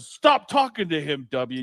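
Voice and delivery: put-on, slow, drawn-out, deliberate scolding tone. Retelling how someone came in and cut off a chat: imitating a friend telling someone off. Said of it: "that sounds exactly like him".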